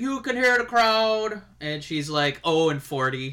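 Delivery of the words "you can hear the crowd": put-on Irish voice. Joking about a wrestler who never wins against Charlotte: Finn Balor impression. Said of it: "such a good Finn Balor impression".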